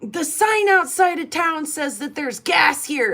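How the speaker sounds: high, mild, contained shouty yell. Retelling a guy who came into the grocery store, imitating a man yelling. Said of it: "like yelling at me one day".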